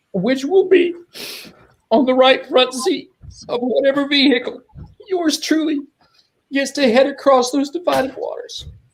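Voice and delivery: very high, halting, choked-up, breaking with emotion. Speaking about the deceased after his burial, emotional. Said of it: "forgive me for being so emotional".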